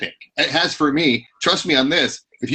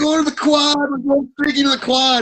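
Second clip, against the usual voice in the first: very high-pitched, hammered-sounding voice; 11 semitones higher than usual. Retelling a movie scene where Will Ferrell's character gets hammered: imitating drunk Will Ferrell in Old School. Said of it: "Will Ferrell's character got super hammered. He goes".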